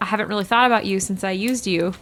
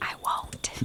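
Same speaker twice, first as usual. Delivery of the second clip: barely there, very quiet, breathy whisper. Voicing a character speaking to another character: whispering. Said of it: "whispers to her".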